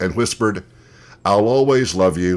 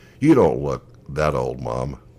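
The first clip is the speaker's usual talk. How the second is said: put-on sweetest, kindest tone, low and gentle; 6 semitones lower than usual. A mother repeats her daughter's remark to her, retelling a kind voice. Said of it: "in the kindest voice said".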